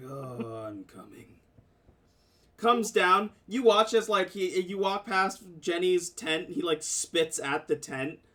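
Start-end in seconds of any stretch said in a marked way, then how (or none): 0.0-1.3 soft, grumbly, grumbling mutter. Recounting a game scene, voicing a companion who gets grumbly: retelling a grumbly reply. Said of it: "he once again gets like kind of grumbly".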